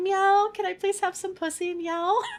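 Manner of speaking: pleading, begging stray-cat meow voice. Imagining him as a stray cat at the window: stray cat begging. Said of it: "stray cat asking for food".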